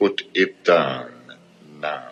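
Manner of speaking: put-on movie villain accent. Quoting the villain's line from the movie scene: Hans Gruber accent. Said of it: "It's pretty tricky with that accent".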